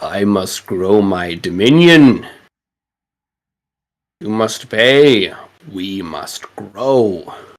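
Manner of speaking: eerie, disembodied creature voice from everywhere and nowhere. Storyteller voicing a creature whose voice comes from everywhere, disembodied voice. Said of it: "you hear this voice again".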